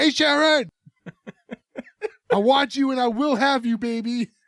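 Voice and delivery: mock hollering, high-pitched and drawn out. Retelling a boy yelling up at a window to a girl: imitating someone yelling. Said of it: "starts yelling up again".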